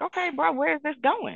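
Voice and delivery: high, incredulous reply. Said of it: "And I'm like".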